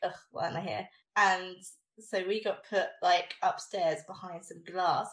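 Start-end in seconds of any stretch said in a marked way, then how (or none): 0.0-0.9 put-on fed-up, put-upon, soft exasperated groan. Retelling a fan event, quoting a sister who didn't want to be there, mimicking her exasperation. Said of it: "my sister was like".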